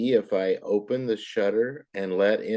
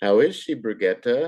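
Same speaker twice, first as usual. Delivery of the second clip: question-like rising tune on Brigitte. Teaching question marks, reading the question with voice rising at the end. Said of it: "See how I raised my voice?".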